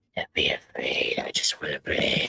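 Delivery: eerie, creepy, breathy, put-on whisper. While talking about playing Persona 5 Royal, slipping into a creepy voice. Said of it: "I sound in that creepy voice".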